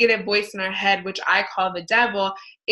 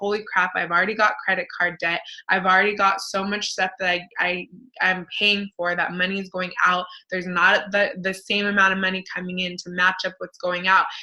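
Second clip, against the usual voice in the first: normal talking voice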